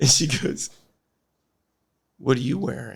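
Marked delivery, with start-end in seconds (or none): 2.2-3.0 soft, sultry woman's voice. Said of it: "She's got this very sultry voice".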